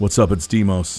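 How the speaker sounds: mock condescending male tone. Imitating a guy who calls himself Demos, mocking Demos's condescending voice. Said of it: "Just the most condescending voice ever".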